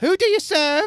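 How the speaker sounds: piercing, very high, very loud yell. Narrating a scene, voicing a water cultist calling out to the group: shouting. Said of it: "One of them shouts out and yells".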